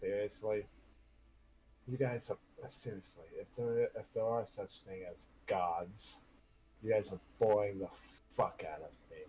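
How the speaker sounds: low half-whisper under the breath. A character frowns up at the sky and addresses the gods, half-whispering to himself. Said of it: "He whispers to himself".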